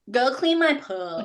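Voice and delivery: gum-smacking housewife voice. Joking with another speaker about sounding like reality-show housewives: reality tv housewife impression. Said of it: "You sound like those like um housewives".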